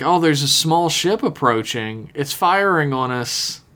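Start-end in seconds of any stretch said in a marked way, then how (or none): none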